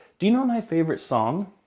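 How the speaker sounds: the sweetest possible, gentle tone. Retelling a frail woman's question after a concert: imitating a sweet voice. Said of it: "in the sweetest voice asked".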